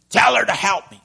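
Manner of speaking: play-acted, fed-up, exasperated tone. Acting out Martha's words to Jesus: mock fed-up. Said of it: "this lady is fed up".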